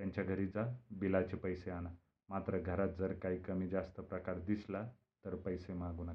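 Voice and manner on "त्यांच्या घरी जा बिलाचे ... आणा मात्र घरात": ordinary delivery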